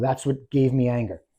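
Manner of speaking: ordinary delivery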